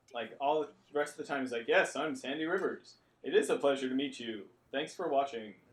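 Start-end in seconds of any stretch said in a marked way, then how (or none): 1.7-5.6 put-on TV newscaster delivery. Imitating how Sandy Rivers always talks: imitating a newscaster tone. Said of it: "his newscaster tone".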